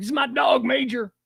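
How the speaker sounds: put-on Southern accent, drawn out. Imitating Biden talking about his dog: Biden impression with Southern accent. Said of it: "I gave Biden a Southern accent".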